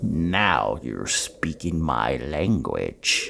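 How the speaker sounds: low, slow, soft gloating murmur with drawn-out "now". The narrator voices the demon king circling the javelineer, gloating Pazuzu voice. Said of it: "I am [name] the Magnificent, king of the aerial realms. / he gloated as he ran his tongue along his teeth, / he gloated as he ran his tongue along his teeth".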